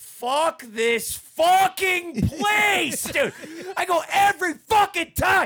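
mock, very slow, high, drawn-out yelling. Telling how he walked out past people in line: retelling a yell. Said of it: "So I'm yelling like that".

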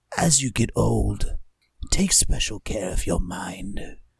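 quiet, acted whisper in character. Voicing a character who leans in close to someone: whispering in character. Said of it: "leans into Rias and goes".

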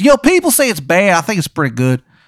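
terrible put-on Maryland accent, high, swooping. Voicing a character praising Natty beer in a bad Maryland accent. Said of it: "His accent is so bad".

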